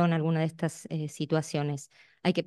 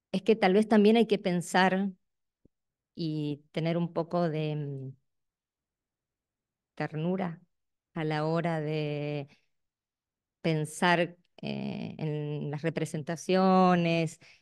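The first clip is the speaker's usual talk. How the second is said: very slow, a little quavering, trembling voice. Sharing a personal, exposed contribution with the group, slightly trembling voice. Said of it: "por eso un poquito me tiembla la voz".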